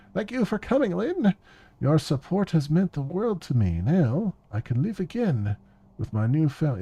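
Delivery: sophisticated, high, swooping, highfalutin silver-spoon socialite voice. Voicing her as she thanks Lynn, in a highfalutin Valley Girl voice. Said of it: "I'm trying to give her like a highfalutin Valley Girl voice".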